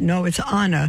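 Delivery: ordinary delivery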